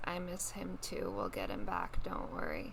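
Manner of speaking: very low, soft, barely there half-whisper. Player describes sneaking over to hug Zonton, half-whispering. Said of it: "give him a hug and just whisper".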